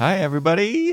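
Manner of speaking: voice cracking and breaking very high. A podcast host greets listeners at the start of the show, voice cracking. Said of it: "Voice crack and a half there".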